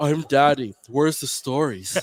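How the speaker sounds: put-on loud, slow, deliberate, bossy grown-up voice from little girl. Retelling how a young daughter does an impression of her dad: imitating a daughter imitating dad. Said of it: "She does an impression of me now".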